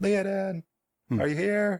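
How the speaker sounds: tiny, small, very high calling voice. Narrating a scene, the game master voices a little boy calling out: Thomas's small little voice. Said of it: "you hear a small little voice call out".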